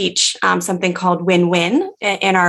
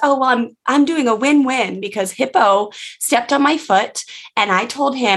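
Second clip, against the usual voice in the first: put-on very small, young, high little-kid voice; 5 semitones higher than usual. Retelling what a girl answered her mom while playing: small young child voice. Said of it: "in very, very like small, young voice".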